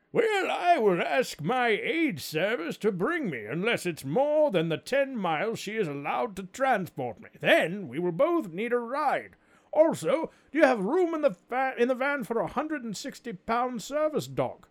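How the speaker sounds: very high-pitched put-on voice. Reading a listener's message aloud, in a Casey voice. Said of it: "I'm going to do this in my best Casey voice".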